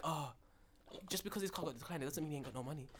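quiet put-on whisper. Retelling what one of the workers standing behind him said, imitating a worker whispering. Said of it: "I had one of them whispering like".

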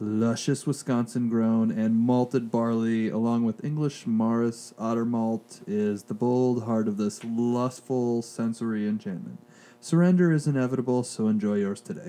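sexy, seductive voice. Reading a beer's label description aloud, sexy voice. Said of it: "you got a sexy voice".

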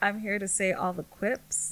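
normal talking voice

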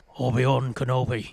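put-on Irish accent. Trying out a voice for Qui-Gon after saying none is prepared: Liam Neeson Irish impression. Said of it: "Irish, Irish, Irish, Irish. Obi-Wan Kenobi. That's not bad".

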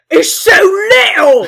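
very loud, high orc voice. Voicing orcs reacting to a commotion outside: orc voice. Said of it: "and all the orcs saying".

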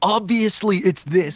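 mock screamed outburst, high-pitched. Imitating Tyler screaming his opinion about the mystery body: imitating Tyler screaming. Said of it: "screaming, like".

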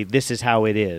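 ordinary delivery

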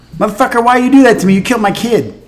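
very high, furious, outraged woman's tirade. Retelling how a widow confronted Elijah about her dead son, imitating an angry widow. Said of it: "the widow was salty in a hurry".

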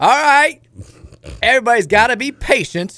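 funny, high, booming, drawn-out stadium PA announcer voice. Retelling what the stadium announcer said: imitating the pa announcer's funny voice. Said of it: "the lady who does the P A there has the funniest voice".

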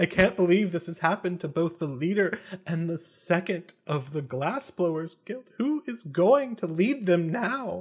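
high voice, lightly sobbing, crying through the words. The narrator voices a woman's line in the story, sobbing a little. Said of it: "She starts sobbing a little bit again".

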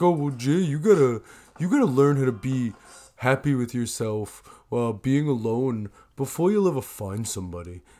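put-on, mock dumb-sounding voice. Recalling advice they used to give, the speaker repeats it in a put-on stupid person's voice. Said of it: "I used to say it in that voice".

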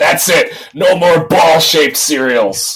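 put-on full-throated, loud, high-pitched bellow. Retelling what dad yelled after stepping on cereal one morning, a loud bellow. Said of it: "loudly bellowed".

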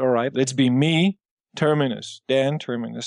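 normal talking voice

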